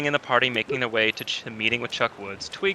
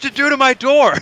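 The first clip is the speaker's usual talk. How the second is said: high-pitched, raised, utterly befuddled tone; 14 semitones higher, 11 dB louder than usual. Voicing a baffled man who asks about his door: befuddled man's voice. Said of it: "cocks an eyebrow up in absolute befuddlement".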